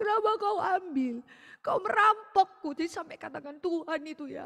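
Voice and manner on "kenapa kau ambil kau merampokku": put-on, high, mournful, grieving keening wail. Retelling a woman lamenting her husband, imitating a grieving wail. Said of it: "Dia meratap suaminya".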